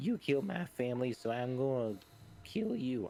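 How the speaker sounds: high-pitched yell, pitched way up. Yelling in character at an enemy who killed the family: high-pitched yell. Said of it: "I'm going to yell at him".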